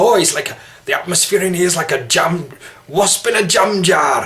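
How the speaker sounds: put-on broad Geordie accent. Trying out accents, imitating Sid Waddell: Sid Waddell impression. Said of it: "A kind of Sid Waddell".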